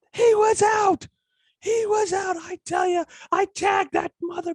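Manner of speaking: shrill, very high, top-of-lungs screaming. Recalling an interview when the old man started screaming at the speaker: imitating Yogi Berra screaming. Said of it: "starts screaming at the top of his lungs".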